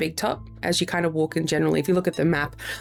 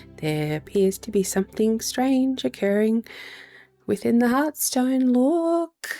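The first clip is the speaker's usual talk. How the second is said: pitched-up, secretive confiding tone, look drawn out; 7 semitones higher than usual. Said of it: "he just says in hushed tones".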